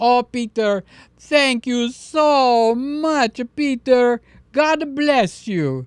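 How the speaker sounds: heavy put-on Greek accent. Retelling a conversation, voicing the priest's reply in a full greek accent. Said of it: "we got the full Greek accent".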